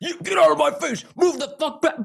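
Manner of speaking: very high, rough, raspy, furious screaming. Retelling a Democrat confronting state troopers: imitating Justin Pearson screaming. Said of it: "He's, like, screaming at these guys".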